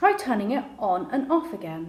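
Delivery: plain reading voice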